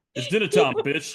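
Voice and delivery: very loud, booming movie-star voice at full volume. Imagining a pet cat demanding dinner: Samuel L. Jackson voice. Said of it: "imagine if that was Samuel L. Jackson".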